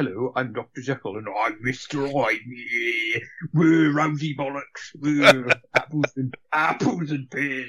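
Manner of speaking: slow, drawn-out tough-guy voice. Imitating an actor playing Mister Hyde: Russell Crowe impression. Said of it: "this is Russell Crowe going".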